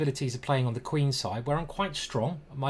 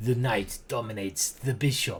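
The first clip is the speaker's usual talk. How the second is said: terrible, obviously fake put-on Russian accent; 4 semitones lower than usual. Commenting on a chess position, trying the line in a bad russian accent. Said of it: "Still a terrible Russian accent".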